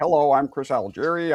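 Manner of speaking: put-on dorky voice, without a New York accent. Imitating how the boxer talks, not like a New Yorker: imitating Chris Algieri talking like a dork. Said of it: "he talks like a dork".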